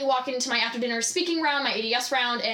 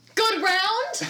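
high, mock, put-on real casual tone; 9 semitones higher than usual. Retelling a fake-casual question in a restroom, imitating acting casual. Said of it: "I'm acting, like, real casual".

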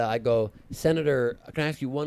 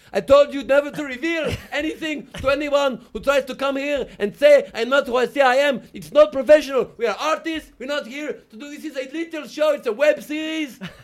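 very high, shrill, loud, ranting put-on yell; 14 semitones higher, 8 dB louder than usual. Retelling yelling back in character at a man who was mad at the speaker. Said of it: "I'm yelling back at him in character".

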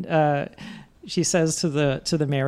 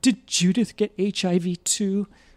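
put-on crying voice, higher; 3 semitones higher than usual. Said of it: "the lady's crying and she says".

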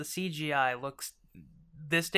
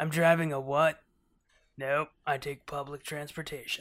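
put-on laid-back, easygoing voice. Imitating an actor refusing to drive: Keanu Reeves impression. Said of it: "That was a great Keanu impression".

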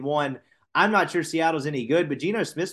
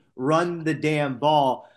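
normal talking voice

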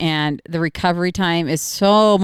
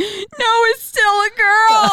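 very high, slow, drawn-out crying child voice, acted; 3 dB louder than usual. A mother retells a child's reaction to teasing about his cat, imitating Tucker crying. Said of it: "and then Tucker starts to cry".

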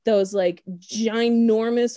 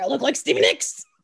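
growling, growled-out retort; 4 semitones higher than usual. Retelling a scene where Amanda growls at the guards: imitating Amanda growling. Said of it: "She growls at them".

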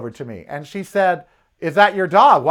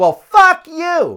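play-acted very high, shrill, screeching outburst; 12 semitones higher, 4 dB louder than usual. Retelling the stranger's reply to being called a Karen, imitating a woman screaming. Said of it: "she screams".

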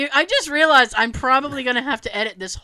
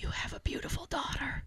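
soft, hushed, very quiet whisper; 16 dB quieter than usual. Taking a turn at whispering a line to others, whispered. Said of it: "I have to whisper".

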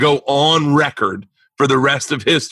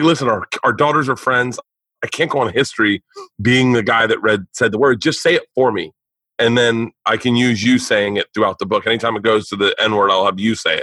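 ordinary talk

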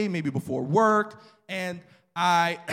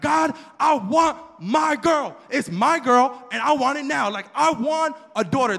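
put-on, high, slow, adamant and insistent voice; 7 semitones higher, 4 dB louder than usual. Telling how the speaker's father wanted a daughter, imitating father's adamant demand. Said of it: "This guy was adamant about having a daughter".

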